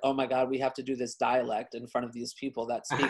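ordinary talk

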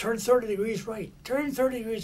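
urgent, worked-up, loud, high, excited voice. Retelling the navigator rushing up with orders to turn, acting out excited orders. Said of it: "He's all excited".

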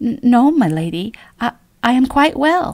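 slow, high, halting, stumbling stammer. A narrator reads a girl answering a lady's concern, stammering. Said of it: "Maria stammered".

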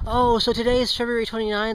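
normal talking voice

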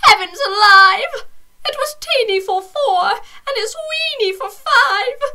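put-on very high, loud, fretful crying little old lady voice. Reading a rhyming story, the little old lady cries out: little old lady crying out. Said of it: "A little old lady lived all by herself".

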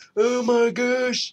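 put-on old man voice, very high. Showing how your voice changes while playing a horror game, old man voice. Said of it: "I always sound like some sort of old man. I go".

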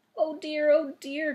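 crying out in dismay, distressed. Dorothy sees feet sticking out under the fallen house, crying out in dismay. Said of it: "cried Dorothy, clasping her hands together in dismay".

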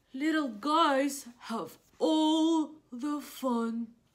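big, loud, very slow, sad giant whale voice. Reading a picture book aloud, voicing the sad whale: big loud whale voice. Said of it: "That's a whale. / it looks like he's just a very sad guy, / So big that no one will play with me. / Because the words are so big and loud".

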